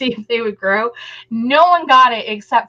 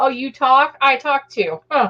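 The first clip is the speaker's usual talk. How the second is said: put-on snide, mocking, sarcastic cat voice; 3 semitones higher than usual. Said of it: "he'd be all sarcastic".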